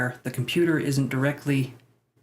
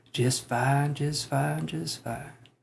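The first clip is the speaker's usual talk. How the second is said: doubtful, unsure, slightly rough creaky voice; 4 dB quieter than usual. Showing a non-confident version of the impression: non-confident Matthew McConaughey impression. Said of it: "The non-confident Matthew McConaughey".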